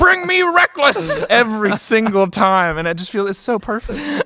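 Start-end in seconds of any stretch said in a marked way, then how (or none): 0.0-1.1 very high-pitched, loud shout. Retelling what the head of the broadcast always says: J. Jonah Jameson shouting. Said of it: "Just like J. Jonah Jameson".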